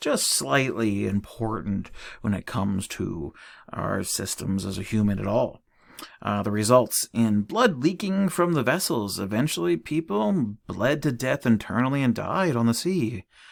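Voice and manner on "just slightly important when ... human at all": thick, heavy, dripping sarcasm. Explaining the effects of a lack of vitamin C, very sarcastic. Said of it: "I'm saying this very sarcastically".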